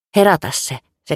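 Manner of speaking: stubborn, defiant delivery with quivering, shaky voice. Elna, still bleeding after the birth, orders the narrator to wake the baby; defiant, trembling command. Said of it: "käski uhmakkaasti, vaikka ääni vapisi".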